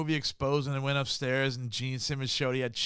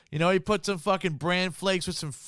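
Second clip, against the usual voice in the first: usual speaking voice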